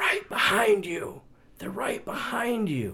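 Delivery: hushed whispering under the breath. Retelling a hunting partner's warning over the radio: imitating someone whispering. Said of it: "I hear him whispering over my radio".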